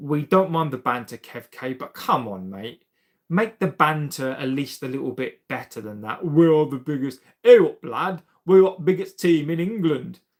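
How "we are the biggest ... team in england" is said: bad, loud put-on northern English accent. Mocking a rival fan's claim about his club, bad northern English accent. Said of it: "My northern accent is absolutely awful".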